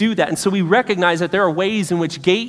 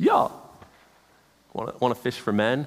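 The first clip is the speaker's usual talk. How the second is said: laid-back, casual, offhand comic tone; 6 semitones lower, 7 dB quieter than usual. Retelling a scripture scene in a funny way, comic casual voice. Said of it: "read this in a funny way".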